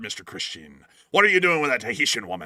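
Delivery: put-on loud Somerset accent, leaning on the R's. Praising an actor's film role, the speaker quotes his line in a Somerset accent as Captain Bligh. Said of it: "a Somerset accent".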